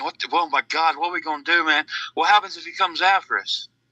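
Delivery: frantic, panicked, freaked-out voice. Retelling a buddy's words during a scary encounter: imitating a panicking buddy. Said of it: "just freaking out, ... panicking".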